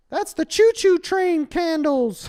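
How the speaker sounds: very high, slow, loud silly voice.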